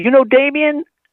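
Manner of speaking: put-on strong, very high-pitched Southern accent. Retelling what a stranger asked the speaker, in a thick Southern accent. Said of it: "like Southern accent".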